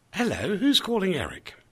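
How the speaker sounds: put-on radio announcer voice. Speaker shows how they answer calls from unknown numbers: best radio voice. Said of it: "I put my bestest radio voice on".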